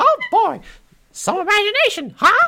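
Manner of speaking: very high, loud, cheerful, beaming mouse voice. Asked by the other speaker for happy Mickey, the speaker tries again: happy Mickey voice. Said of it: "Happy Mickey".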